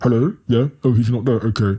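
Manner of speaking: strained, tight, squeezed put-on dad voice. Recalling answering hello and saying he's not there, tight voice imitating his dad. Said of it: "if I made it tight enough, I'd sound like my dad".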